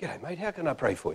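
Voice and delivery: said softly and quietly. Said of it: "No microphone, by the way".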